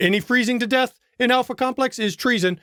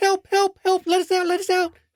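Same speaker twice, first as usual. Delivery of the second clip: very high, squeaky, pleading put-on voice, repeated; 10 semitones higher than usual. Playing the ones trapped in the cells, in a high-pitched voice. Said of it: "with a high pitched voice".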